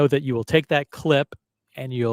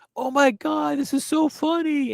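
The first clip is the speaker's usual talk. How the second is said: very high, over-the-top fake laughing gush; 13 semitones higher than usual. Describing a talk show host collapsing on the floor: imitating Jimmy Fallon's fake laugh. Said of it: "doing the fake laugh".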